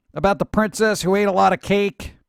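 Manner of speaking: ordinary talk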